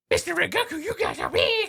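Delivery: very high, loud voice shooting up and swooping wildly. Doing the voice again when asked: Tanjiro voice going crazy. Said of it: "Do that again, a bit closer".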